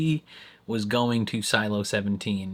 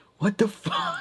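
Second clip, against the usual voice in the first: furious, very high exclamation, acted out; 12 semitones higher than usual. Retelling a character seeing a desolate outside: imitating someone furious. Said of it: "he's so mad".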